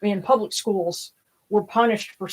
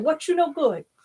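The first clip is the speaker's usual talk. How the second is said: put-on higher-pitched old woman voice with Cajun accent; 8 semitones higher, 3 dB quieter than usual. Describing how grandmother greeted people, the speaker imitates grandmother's way of speaking. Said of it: "That's how she said".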